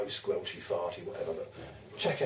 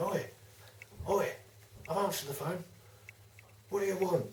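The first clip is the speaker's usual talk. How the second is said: put-on very high, loud hollering; 10 semitones higher, 5 dB quieter than usual. Retelling a phone call where the other person kept talking, the speaker re-enacts shouting down the phone. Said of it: "so I'm shouting down the phone".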